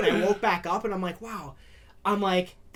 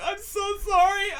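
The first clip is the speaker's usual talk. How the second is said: very high, sobbing, crying voice; 12 semitones higher than usual. Retelling an apology made after an injury, imitating own crying. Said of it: "and I'm, like, crying".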